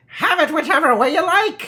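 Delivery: very high, squeaky creature-like shout. The gnome shouts as it comes up on your hiding place, in a squeaky creature voice. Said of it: "shouts the creature in a squeaky voice".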